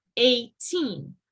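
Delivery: put-on eighteen, leaning hard on -teen. A speaker contrasts number pairs for listeners, stress on TEEN. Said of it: "So the stress is on the teen".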